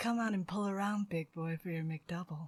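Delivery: put-on sultry, seductive voice. Recalling talking to drive-thru customers in the mornings, in a put-on phone sex voice. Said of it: "I'd bring out the phone sex voice".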